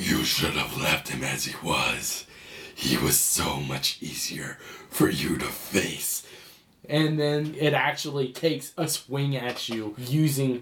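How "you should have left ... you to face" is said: deep ominous menacing spirit voice, lower. Voicing an elemental spirit threatening the players: menacing deep spirit voice. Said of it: "you hear the voice going".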